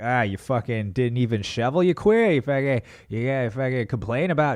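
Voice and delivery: put-on Boston local accent, ranting. Playing a character from boston complaining about not shoveling: boston accent. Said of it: "'Cause he was from Boston".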